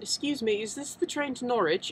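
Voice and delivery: poor put-on British accent. Recalling what popped out of their mouth when asking someone, bad British accent. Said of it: "that's not a very good impersonation of a uh, British accent".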